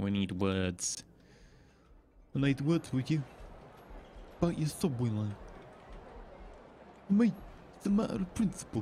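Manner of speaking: put-on Italian mob-boss mafioso accent. Building a subway line in a city-building game, Italian mafioso accent. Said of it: "that's my best, you know, Italian mafioso accent".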